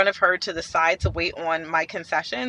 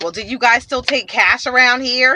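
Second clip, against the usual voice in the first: loud, thick, heavily laid-on cowboy twang; 5 semitones higher, 6 dB louder than usual. Retelling what a man said loudly to a cashier: imitating a loud cowboy twang. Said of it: "your biggest, like, con-, cowboy, you know, twang to the voice".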